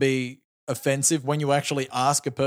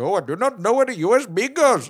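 high-pitched mock Indian English accent; 7 semitones higher, 3 dB louder than usual. Describing an impersonation about an Indian IT worker, speaker does a mock Indian accent. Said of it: "if I was to impersonate someone coming to Australia, had an Indian guy".

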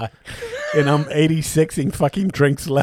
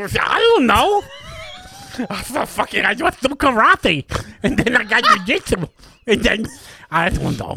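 drawn-out, high-pitched, swooping put-on character voice; 8 semitones higher than usual. Answering a question about the next show: Kermit voice. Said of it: "ask me something".

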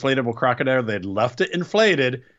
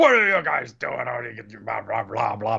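put-on rough, angry, scolding boss voice; 2 semitones lower than usual. Retelling how a man scolded two guys called into his office, with a put-on angry voice. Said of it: "putting on his angry voice".

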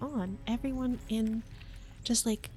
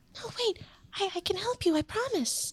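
faint, tiny, very high fairy-like voice; 9 semitones higher than usual. Voicing a little glowing pixie that asks the group to wait: faint pixie voice. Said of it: "the little hint of, of a voice say".

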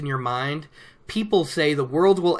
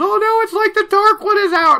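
very high, very loud, alarmed, panicked shriek; 9 dB louder than usual. Speaker acts out someone reacting to a story reveal: retelling a scream.

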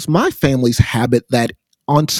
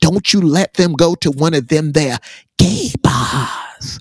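put-on whisper in a preacher's manner; 3 semitones higher than usual. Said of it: "he talked like that, you know, he whispered".

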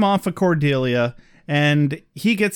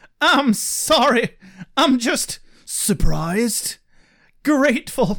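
high, slow dramatic reading. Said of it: "mini dramatic reading here".

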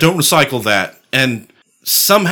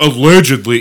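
mock hedging, cautious voice, louder; 4 dB louder than usual. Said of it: "I'm not trying to be like".

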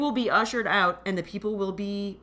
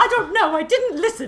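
British radio-play voice, higher and louder; 11 semitones higher, 5 dB louder than usual. Quoting a radio play to show how another reader sounded: Arthur Dent voice. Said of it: "you sounded like Arthur Dent".

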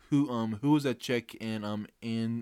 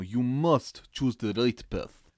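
put-on Russian accent, louder; 4 dB louder than usual. Told not to, the speaker tries a Russian voice anyway: Russian accent. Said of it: "I don't want you to do a Russian voice".

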